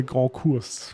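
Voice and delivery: sudden switch to French-accented pronunciation. Naming the grand course layout in a french accent. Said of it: "I don't know why I said this so in a French accent".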